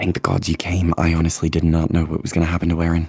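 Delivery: whispering. Voicing a character relieved that another came, speaking in a whisper. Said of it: "Harrigan's gonna whisper".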